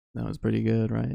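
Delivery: ordinary talk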